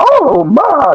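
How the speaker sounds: put-on high-pitched, exclamatory old lady voice. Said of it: "They talk like that".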